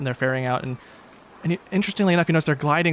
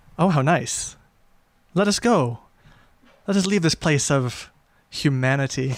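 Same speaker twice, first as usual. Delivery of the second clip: sarcastic, mock-polite delivery. Voicing a character taking a companion's hand: sarcastic in-character reply. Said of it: "equally sarcastically take her hand".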